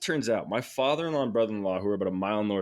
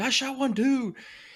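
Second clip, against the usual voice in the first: high, carrying scream. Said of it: "We're just screaming at each other".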